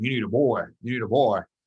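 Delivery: put-on Louisiana-flavored speech, Louisiana accent. Quoting what the speaker's grandfather always said, imitating a louisiana accent. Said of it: "with that Louisiana, you know, accent".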